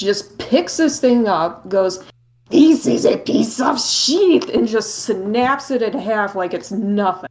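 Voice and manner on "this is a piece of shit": shoddy put-on French accent, pitched up. Retelling a little meatball man snapping the sword in half, in a shitty French accent. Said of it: "space Wario with a shitty French accent".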